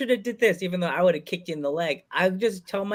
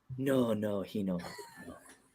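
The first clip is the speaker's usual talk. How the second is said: slow, swooping, sing-song Spanish lady voice, "no" drawn out; 9 semitones lower, 10 dB quieter than usual. Quoting a favorite Family Guy character, the Spanish lady: Consuelo impression. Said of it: "I'm obsessed with the, uh, the Spanish lady".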